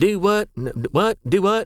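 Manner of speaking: put-on Oklahoma accent. Speaker shows how you can tell you're talking to an Okie, Okie accent. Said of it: "That's how you can tell you're talking to a Okie".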